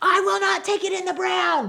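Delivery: very high, loud yell at full blast. Speaker retells how a woman finally yelled her demand; imitating someone yelling. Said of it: "she just yells it so loud".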